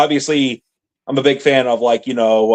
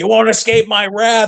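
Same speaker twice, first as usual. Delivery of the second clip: genuinely furious, menacing tone, pitch way up; 9 semitones higher than usual. Retelling a scene where Vegeta is pissed off: imitating pissed-off Vegeta. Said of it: "He sounds legitimately pissed off".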